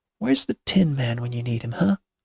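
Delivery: ordinary delivery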